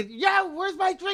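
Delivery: put-on yelling. Acting out a rude customer at the bar: imitating a customer yelling. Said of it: "You're fucking yelling at me like this?".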